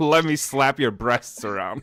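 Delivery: laughing, mock flirtatious tone.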